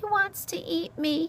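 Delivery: weak, faint voice. Answering another character's question about the fox, she says it faintly. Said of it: "Poppy said faintly".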